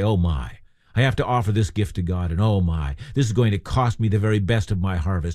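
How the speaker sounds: low, grudging grumble.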